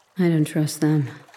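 mumbling indistinctly. Narrator reading a dozing man's reply just before he snores, mumbling. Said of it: "he mumbled".

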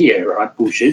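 ordinary delivery

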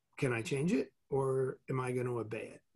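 plain

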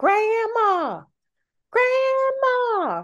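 put-on, very high, swooping, wailing cry of a child. Retelling a child calling for his grandma, imitating a wailing child. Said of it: "he starts wailing grandma's name".

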